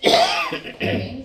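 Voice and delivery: schoolteacher voice.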